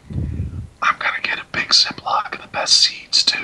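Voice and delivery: soft, secretive, sneaky, conspiratorial whisper. Potman leans in toward the group as they pack up, Potman's conspiratorial whisper. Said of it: "conspiratorially whispers".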